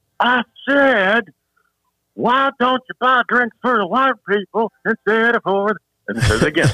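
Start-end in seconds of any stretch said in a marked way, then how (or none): 0.2-5.8 very high-pitched, shrill shout. Telling how a man stood up on his chair, the speaker retells his yell. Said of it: "And then he yells".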